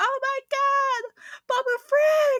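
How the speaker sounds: shrill, very high, loud screaming shriek. Speaker retells her older sister's reaction while watching The Mandalorian, imitating her screaming. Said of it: "like literally screaming".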